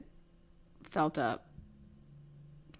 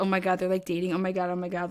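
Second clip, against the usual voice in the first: ordinary delivery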